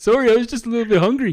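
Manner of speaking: loud, very high, exaggerated Canadian accent. Speaker imagines an apologetic canadian cannibal, exaggerated canadian accent. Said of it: "Canadian cannibal, they'd be like".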